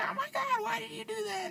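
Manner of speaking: mock, very high, frightened shrieking scream. Retelling her reaction to drifting around a gravel curve: imitating someone screaming in fear. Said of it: "she was screaming, scared".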